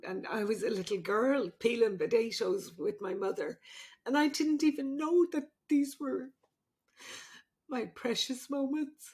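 tearful, weeping voice. Speaking to Bridget about her hopes for when she's gone, crying. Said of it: "I'm sorry for crying".

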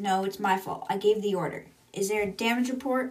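ordinary talk

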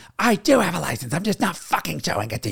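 high, furious, angry yelled scream. Retelling a 911 call after being hit, imitating the other driver screaming. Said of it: "And she screams".

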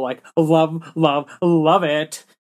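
put-on slow, drawn-out Valley Girl accent. Praising a movie, imagining it said by a valley girl, in a valley girl voice. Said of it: "I could just imagine this being some like Valley Girl".

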